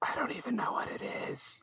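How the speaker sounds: unvoiced whisper under the breath.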